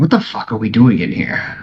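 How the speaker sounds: hushed whisper under the breath. A player speaking in character to the group, whispering. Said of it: "I whisper to the group".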